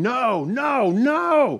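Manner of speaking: high-pitched screaming, repeated over and over. Retelling a man waking from a dream of his own funeral, retelling a scream. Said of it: "he started screaming".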